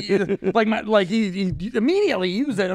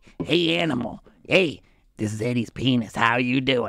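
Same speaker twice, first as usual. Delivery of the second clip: evil, sinister put-on voice, much lower; 10 semitones lower than usual. Acting out a bit where a talking body part greets the speaker, evil put-on voice. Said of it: "such an evil voice".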